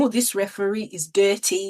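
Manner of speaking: put-on mocking tone. Recalling watching England versus Ghana, retelling a mocking remark. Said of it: "I was mockingly saying".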